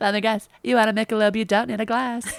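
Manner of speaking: put-on cute, affectionate waitress voice. Acting out a waitress greeting regulars, in a cute waitress voice. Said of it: "cute waitress that loves you".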